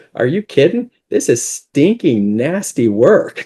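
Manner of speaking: play-acted sarcastic delivery, high and swooping. Retelling a rich old man's answer about his work, retelling a sarcastic remark. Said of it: "kind of sarcastically".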